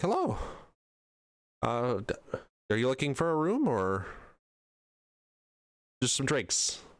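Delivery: friendly, slightly high innkeeper voice. Narrating a game, the speaker voices a portly innkeeper greeting the players, slightly higher innkeeper voice. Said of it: "a little bit higher voice than you'd expect".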